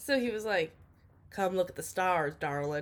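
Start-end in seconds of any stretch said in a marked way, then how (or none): 1.3-2.8 put-on rural country accent. Retelling what a man at the dome said to the speaker, in a country accent. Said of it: "he had like a real country accent".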